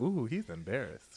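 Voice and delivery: play-acted amused delivery, chuckle running through the words. Retelling a cast member's confessional reaction: imitating someone chuckling while talking. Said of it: "She was chuckling in her".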